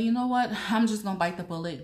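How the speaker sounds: high, loud, decisive burst of resolve.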